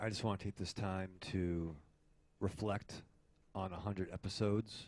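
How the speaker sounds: hushed, soft, earnest half-whisper close to mic. Reflecting on a hundred episodes with the others: half-whispering. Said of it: "why are you whispering?".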